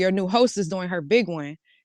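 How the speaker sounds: plain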